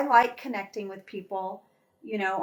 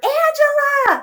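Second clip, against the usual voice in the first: long, very high, loud stretched-out yell. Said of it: "I hear".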